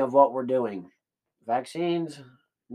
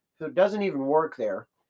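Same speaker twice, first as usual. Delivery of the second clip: usual speaking voice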